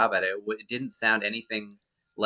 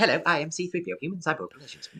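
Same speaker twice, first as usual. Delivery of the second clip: put-on robot voice, pitched up; 7 semitones higher than usual. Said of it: ""So let's hear you do the voice."".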